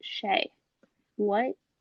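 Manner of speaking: hushed whisper. Retelling asking a brother about a bad word at breakfast: imitating own whisper as a child. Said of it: "very, very whispering it".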